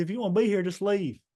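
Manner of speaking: mock spitting, screaming yell, very high. Retelling a confrontation at practice, imitating J R screaming. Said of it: "he's spitting, screaming, yelling".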